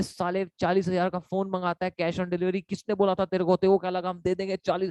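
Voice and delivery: ordinary talk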